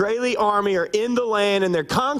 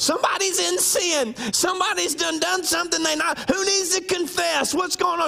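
put-on very high, accusatory grandma voice; 9 semitones higher than usual. Imitating a great-great-grandmother who accuses everybody when something breaks. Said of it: "accusing everybody".

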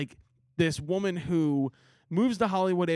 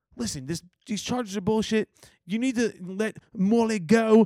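put-on English accent, pitched up; 5 semitones higher, 4 dB louder than usual. Retelling an emotional movie monologue in Idris Elba's English accent. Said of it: "English accent".

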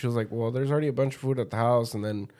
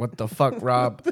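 angry, ranting outburst. Retelling what was said to Rob about the food: imitating own angry outburst. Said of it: "I was angry".

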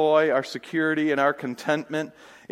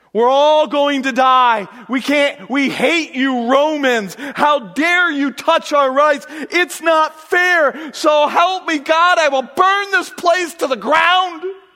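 very high, shrill, drawn-out screaming; 11 semitones higher, 8 dB louder than usual. Acting out Paul and Silas at midnight: imitating Paul and Silas screaming. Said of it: "Paul and Silas are screaming".

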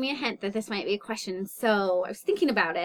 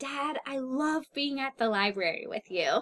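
put-on small girl's voice, calling out mildly; 4 semitones higher, 3 dB quieter than usual. Retelling a little girl at the library shouting to her dad: imitating a girl shouting. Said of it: "she shouted really loudly".

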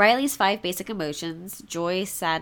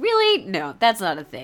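angry, indignant, snapped-out outburst. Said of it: "don't really need to be angry about".

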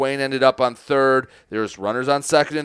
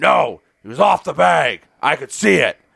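mock-proud, clear umpire-style call. Retelling how the umpire answered on a close play at first, mock-proud. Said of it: "very clearly and very proudly went".

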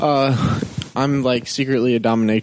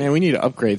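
normal talking voice

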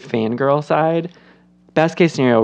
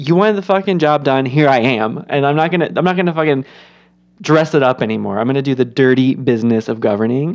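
plain

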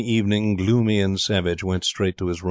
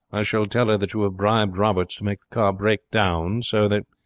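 usual speaking voice

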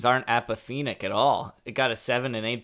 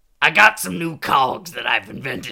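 thick, loud, very smoky voice; 2 semitones higher, 7 dB louder than usual. Retelling what a tiny man with a cigar said, in a super smoky voice. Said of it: "a super smoky voice".

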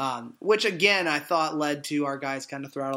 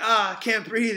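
mock gasping for breath, higher; 7 semitones higher, 4 dB louder than usual. Retelling a player's words after a hard hit: imitating someone out of breath. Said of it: "trying to catch his breath".

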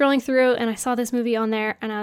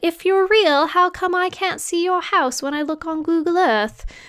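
put-on high-pitched British little-girl accent; 6 semitones higher than usual. Retelling a little girl's letter to santa, british child accent. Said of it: "that's why I had to do the accent".

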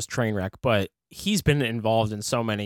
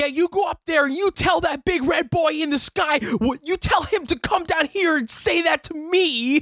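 very high-pitched, hard, loud yelling; 3 dB louder than usual. Doing an impression of Jeremy Renner as Hawkeye yelling at Hulk. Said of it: "doing an impression of, uh, Hawkeye or Jeremy Renner".

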